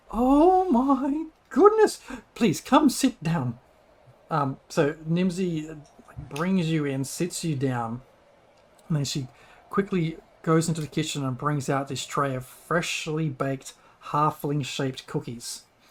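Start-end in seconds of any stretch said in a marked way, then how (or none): 0.1-3.6 high, slow, drawn-out alarmed gasp. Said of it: "Nimsy hears of moose problem".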